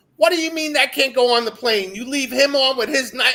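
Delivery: put-on very high, shrill, loud freak-out. Retelling the speaker's wife at airport security, imitating her flipping out. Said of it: "she starts flipping out".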